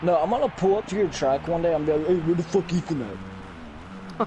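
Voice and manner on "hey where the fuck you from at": slow, put-on deep voice. Imagining pulling up to the listener's track and addressing their grandpa, in a put-on deep voice. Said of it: "In a deep ass voice".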